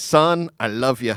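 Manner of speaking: poor put-on Scottish accent. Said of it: "my shitty Scottish accent".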